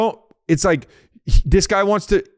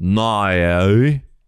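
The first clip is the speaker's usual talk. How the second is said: put-on "no" low and drawn-out, Australian accent. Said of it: "That's what it is with no".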